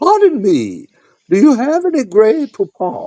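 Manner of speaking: put-on very high, swooping old woman voice. Doing a quoted line for the group, in an old woman's voice. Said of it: "in your best old woman's voice".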